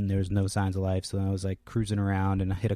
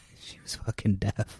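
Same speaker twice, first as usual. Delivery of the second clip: usual speaking voice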